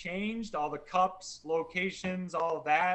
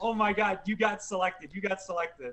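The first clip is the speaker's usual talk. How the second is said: put-on tearful crying voice, pitched higher; 3 semitones higher than usual. Retelling the brother-in-law's reaction on the phone: imitating someone crying. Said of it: "started crying on the phone and was like".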